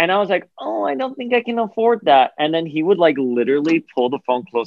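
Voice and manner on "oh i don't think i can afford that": put-on very high, squeaky twelve-year-old kid voice. Recalling talking to a store owner by phone as a kid, the speaker uses a squeaky 12-year-old voice. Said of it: "this squeaky 12-year-old voice".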